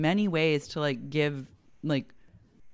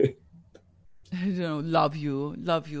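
put-on French accent. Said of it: "And now speaking in a French accent".

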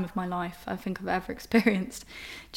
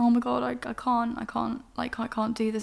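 put-on sobbing, higher, much slower; 3 semitones higher than usual. Recalling bursting into tears at a door, speaker acts out their sobbing. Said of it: "crying, sobbing, like".

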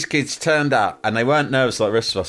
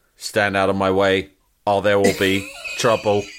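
put-on robot cop voice, much lower; 2 semitones lower than usual. Speaker retells what a boy at school would say to people in his way, in a RoboCop voice. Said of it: "he'd go".

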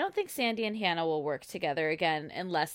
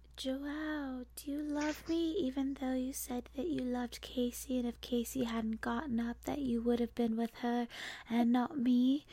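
put-on whisper, higher and quieter; 6 semitones higher, 5 dB quieter than usual. Imitating someone who always talks at a whisper: imitating Brooke whispering. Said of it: "Why does she always talk at a whisper?".

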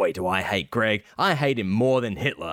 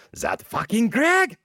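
put-on high-pitched German accent; 13 semitones higher than usual. Redoing a comic's last line as asked: Hitler with German accent. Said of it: "you didn't do it in a German accent".

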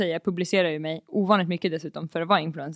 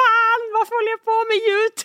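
shrill, very high, loud screamed outburst; 5 dB louder than usual. Recalling crouching down at a club, retelling own screaming. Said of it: "och bara skriker".

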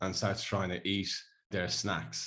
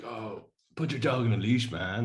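bad put-on Australian accent, slower; 3 semitones higher, 3 dB louder than usual. Retelling what an unhappy man approaching said about the dog, in an attempted Aussie accent. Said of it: "is it American?".

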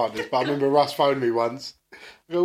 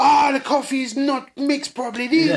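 imitated shout, higher and slower; 12 semitones higher, 5 dB louder than usual. Speaker mocks a man making coffee who shouts at staff: retelling his shouting. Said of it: "he's shouting at them like".

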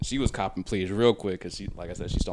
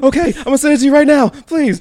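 put-on very high, very loud, shrill, terrified girl voice; 16 dB louder than usual. Quoting what someone said while telling a story, in a put-on terrified girl voice. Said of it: "I love that your girl voice is just a girl with a gun to her head".

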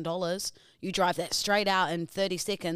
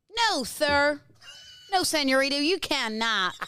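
fairly convincing put-on American accent, pitched up; 9 semitones higher, 4 dB louder than usual. Speaker doing a character bit for the others: put-on accent. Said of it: "That's not a bad accent".

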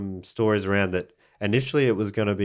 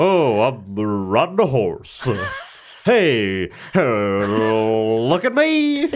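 put-on cowboy toy voice, louder; 5 dB louder than usual. Joking about a pull-string cowboy doll's phrases: Woody pull-string doll voice. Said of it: "you pull the string and he'll say different phrases".

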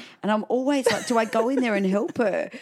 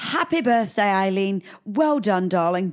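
put-on royal voice. Joining in on the Queen's birthday message, imitating the Queen. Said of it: "She'd be more like".

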